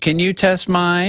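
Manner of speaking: put-on high, slow, drawn-out little old lady voice. Speaker retells a woman asking at a drink check before boarding, little old lady voice. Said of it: "literally this old little old lady voice".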